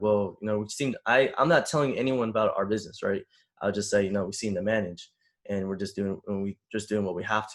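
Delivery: ordinary delivery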